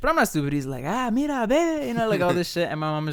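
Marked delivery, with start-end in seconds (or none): 0.9-1.9 male voice, very high and pitched-up, speaking Spanish. Retelling how a man talked to the speaker's mom: imitating a man speaking spanish. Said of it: "he's talking in Spanish".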